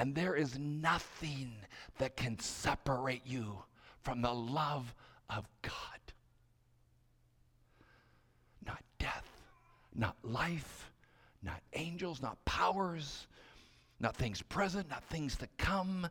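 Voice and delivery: quiet whispered voice. After the shouted accusations, the speaker voices God's reply, whispering God's words. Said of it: "But God whispers".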